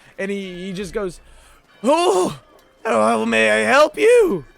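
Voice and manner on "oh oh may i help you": put-on very slow, creaky, drawling old gnome voice. Narrator voicing a gnome who looks up as you walk in: old gnome voice. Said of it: "you see a very old-looking gnome".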